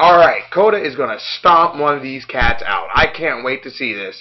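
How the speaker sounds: ordinary delivery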